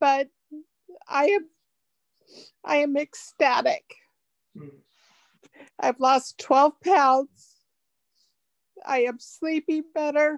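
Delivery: tearful, speaking through tears. On day seven, the speaker describes how much better life has become, tearful. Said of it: "I'm sorry for the tears".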